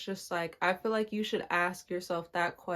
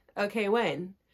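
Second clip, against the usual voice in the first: impatient, itching for it to be over. Describing her own slow healing process: imitating her own impatience. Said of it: "as an impatient person".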